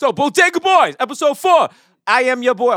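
excitable, loud, high shouting. Opening the show's episode intro, yelling. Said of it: "Why am I yelling?".

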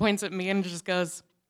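ordinary delivery

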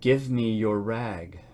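gentle and tender. Narrator reads the ragman's words to a weeping woman, gently. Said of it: "he said so gently".

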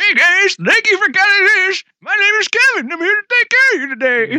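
very high, put-on elderly man voice. Offering a joke service, he introduces himself to the guys in an old man voice. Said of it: "Your old man voice".

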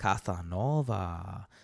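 low, sultry, slightly sexy put-on Latin accent. Saying the name Casanova the way it must be said: sexy Latin voice on 'Casanova'. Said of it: "like sexy voice, but like a little Latin sexy voice".

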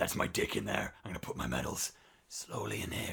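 put-on creepy wrestler voice. Acting out a wrestler slowly opening his tights: imitating Chris Benoit creepily. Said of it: "It's really fucking creepy".

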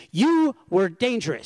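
woman's shrill, loud, accusing yell. Retelling how an angry parent yelled at the car window: imitating a woman yelling. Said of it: "she yells at me".

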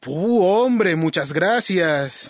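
sarcastic, mocking tone of thanks. Thanking the other speaker for a rescue: sarcastic thanks. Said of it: "Puedes dejar el sarcasmo".

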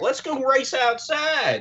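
put-on Southern accent, pitched way up. Retelling a movie plot, voicing Lightning McQueen with a Southern accent. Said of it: "you gave Lightning McQueen a Southern accent".

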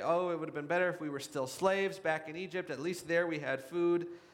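plain

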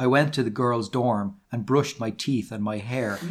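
usual speaking voice

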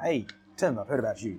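put-on speaking in an English accent. Recalling a phone call from the owner of Pavilions, Gordon's English accent. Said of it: "in his English accent".

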